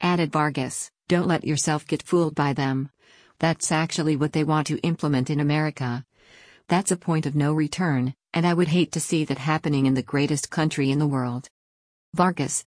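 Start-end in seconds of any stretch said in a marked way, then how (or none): none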